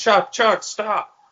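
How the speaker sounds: shrill, piercing, very high shout. Retelling a movie scene where characters yell at a gunner: retelling a yell.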